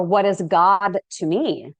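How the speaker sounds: plain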